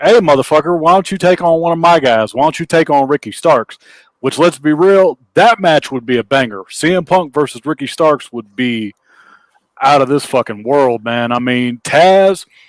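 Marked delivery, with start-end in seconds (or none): 0.0-3.8 acted, pissed-off, challenging wrestling-style outburst. Retelling how Taz reacted to a wrestler's promo: imitating an angry Taz. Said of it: "he gets all pissed off, and he's like".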